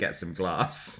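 put-on light, Scottish-sounding accent. Quoting the other speaker's line back: imitating a Scottish-sounding line. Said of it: "sounded more Scottish".

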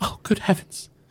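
hushed, soft, breathy whisper. The narrator voices an unseen creature heard in a chamber, whispering voice. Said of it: "you hear a whisper voice go".

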